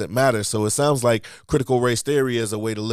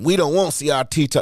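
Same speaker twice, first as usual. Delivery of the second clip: put-on Southern accent, pitched up, for show; 5 semitones higher, 3 dB louder than usual. Voicing people who don't want CRT taught, in a put-on Southern accent. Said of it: "now I'm doing the Southern accent".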